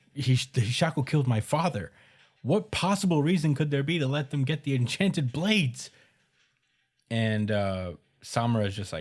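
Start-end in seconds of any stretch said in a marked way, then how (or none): 0.2-5.9 full-on shouting outburst, pitched-up, raised yell. Retelling a scene where Chihiro confronts Samura: imitating Chihiro yelling. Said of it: "he starts yelling".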